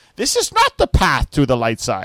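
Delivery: animated, swooping, sing-song sat-nav voice. Describing a themed navigation app, the speaker imitates the navigation voice. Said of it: "And he goes".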